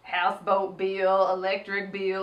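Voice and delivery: odd put-on seductive seducer voice. Retelling how someone spoke, in a Ladies Man voice. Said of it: "She sounded like the ladies' man".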